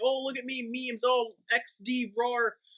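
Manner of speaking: put-on very slow, drawn-out anime child voice. Retelling how she sounded in her videos: imitating an anime child voice. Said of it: "she sounded literally like an anime child".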